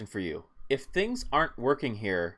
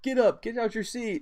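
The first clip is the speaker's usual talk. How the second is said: very high, rousing scream; 9 semitones higher than usual. Retelling a replayed arena clip: imitating KG screaming at the crowd. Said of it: "he's, like, screaming at the crowd".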